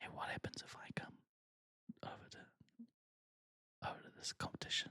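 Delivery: hushed, slow, drawn-out, creepy whisper. Imitating friends luring someone back into the competition: imitating friends whispering. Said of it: "I'm gonna start whispering".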